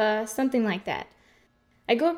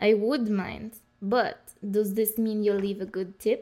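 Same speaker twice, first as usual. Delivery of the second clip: slow, put-on Russian accent. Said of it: "What does a Russian accent have to".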